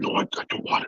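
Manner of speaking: hammy, breathy, overacted whisper. Predicting how a wrestler will refuse the belt: imitating Edge overacting. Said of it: "he loves his overacting".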